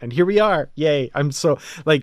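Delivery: loud, giddy, bubbling-over excited delight. Speaker talking about a writer they admire: giddy. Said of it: "you can hear the giddiness in my voice".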